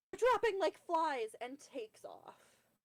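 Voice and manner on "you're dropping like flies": frantic, panicked, shrill, rushed, very high and very loud. Voicing a character in the game who flees: frantic. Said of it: "she frantically, uh, quickly stops and says".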